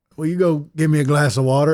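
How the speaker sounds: put-on half-asleep, sleepy voice. Retelling waking at night and asking for water: Addie voice. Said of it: "And I said it like Addie would".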